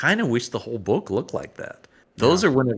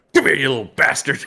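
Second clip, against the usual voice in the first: mock-furious, pissed-off put-on voice; 4 dB louder than usual. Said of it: "another pissed off looking Luke".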